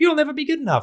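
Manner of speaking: very high, squeaky cartoon voice. Transforming a line into a cartoon character's delivery, Mickey Mouse voice. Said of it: "with his high squeaky voice".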